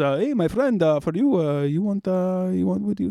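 mock Middle Eastern accent. Retelling a man trying to sell him stuff, offensive fake Middle Eastern accent. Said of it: "offensive reenactment of what I think a Middle Eastern man sounds like".

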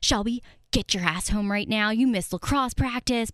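put-on angry, not-nice scolding voice. Retelling a mom's threatening texts, imitating mom being not nice. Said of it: "it wasn't that nice".

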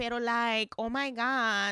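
put-on stretched-out words in a Spanish accent. Describing a friend from Miami, imitating Bridget's Spanish accent. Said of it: "she talks like she's Spanish".

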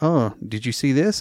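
ordinary talk

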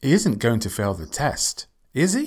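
pitch rising at the end on "is he". Question tag lesson, when unsure of the answer: rising intonation on is he. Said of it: "Rising intonation when you actually don't know".

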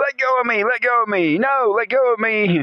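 put-on high, shrieking, very high screaming child voice. Retelling a kid being dragged home by a dog: imitating a screaming, complaining kid. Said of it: "screaming and complaining in various ways".

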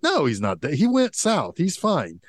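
irritated, insistent tone. Retelling a movie scene where a character gets kinda mad: imitating a character getting mad. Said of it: "and he gets kinda mad".

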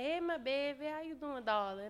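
put-on New Orleans accent. Speaker imitates how an aunt from New Orleans greets them: imitating T. Cheryl's New Orleans accent. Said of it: "She'd be like".

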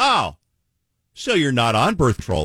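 mock, swooping, triumphant caught-you-out tone. Speaker retells their own line from an argument, retelling a triumphant remark. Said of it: "I said triumphantly".

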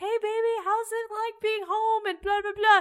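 overjoyed, super happy, cheery voice. Retelling someone's phone greeting: imitating someone super happy. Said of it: "super happy in Maine".

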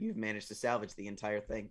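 ordinary talk

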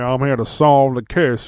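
exaggerated Southern American accent. Describing how a show plays a British character, Foghorn Leghorn Southern accent. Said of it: "he's got like a southern accent ... they're making him very like foghorn, leghorn here".

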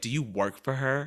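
stuck-up, snotty, snide, attitude-laden tone. Retelling a coworker's question to another coworker at work: imitating a snotty question. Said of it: "she said it in such a snotty way".

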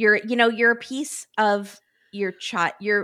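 ordinary delivery

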